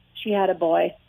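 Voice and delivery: straight-faced flat delivery. Retelling a father's joke about a new baby: imitating a deadpan reply. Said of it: "he's just straight, like, straight".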